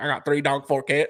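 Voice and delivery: put-on mumbling cartoon voice. Retelling what a guy on the street said, in a Boomhauer-style mumbled drawl. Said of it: "speaking about accents".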